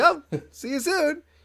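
scared, nervous voice. Retelling a cartoon scene about a phone call, imitating scared Marge. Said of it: "she's all scared".

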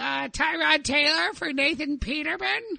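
put-on high, slow old nerd voice.

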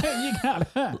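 high, laughing, mocking voice.

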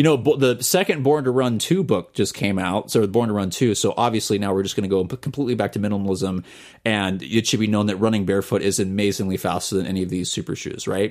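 ordinary talk

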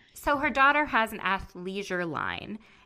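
plain

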